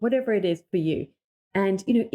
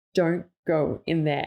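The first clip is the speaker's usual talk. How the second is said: dead-serious, very grave tone; 2 semitones lower than usual. Speaker retells what homeowners say about a room; quoting a really serious tone. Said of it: "they say it in a really serious tone".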